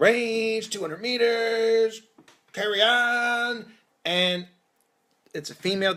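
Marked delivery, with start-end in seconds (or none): 0.0-3.7 acted-out, high, drawn-out yell. Telling about a dentist visit, the speaker re-enacts yelling orders from the chair. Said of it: "my hands are now going and I'm yelling".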